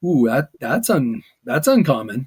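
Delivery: put-on surprised reaction. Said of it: "you're going like".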